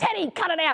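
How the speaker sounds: put-on high, fed-up, frustrated yell. Describing yelling at a barking dog from reception, imitating own frustrated yell. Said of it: "I do get frustrated and yell".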